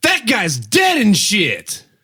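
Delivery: very slow, drawn-out, swooping yell. Proposing a catchphrase to the others: yelled catchphrase. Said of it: "I like how you yell into your mic".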